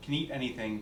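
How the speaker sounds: normal talking voice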